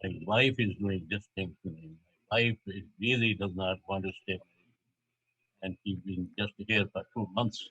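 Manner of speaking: normal talking voice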